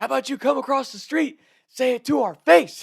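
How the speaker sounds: mock screaming, very high and shrill. Retelling a shouting match with a stranger: imitating own screaming. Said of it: "we're screaming at this guy".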